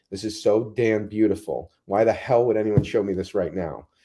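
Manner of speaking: imitated tearful speech. Retelling sitting down among pine trees, drinking water: retelling own crying words. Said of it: "I remember crying, going".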